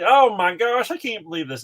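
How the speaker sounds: really awful, bad rural North Carolina accent. Retelling his reaction to a present, in his really awful north carolina accent. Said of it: "with my really awful North Carolina accent".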